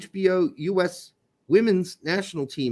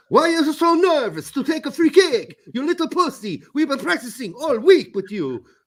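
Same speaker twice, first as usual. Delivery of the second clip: put-on Italian accent, pitched up; 8 semitones higher, 4 dB louder than usual. Imitating the coach talking to a player about a free kick, italian accent. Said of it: "with an Italian accent".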